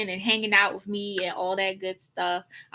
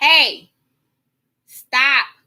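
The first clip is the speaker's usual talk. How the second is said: very loud, high-pitched yell; 5 semitones higher, 8 dB louder than usual. Mid-talk, the speaker yells at a cat hitting the water bowl. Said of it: "I'm probably yelling in y'all ear".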